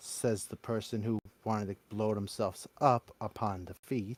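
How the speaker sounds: cold, icy, frosty put-down. Retelling a story scene, voicing Fox's retort: imitating Fox's cold tone. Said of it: "in a cold voice".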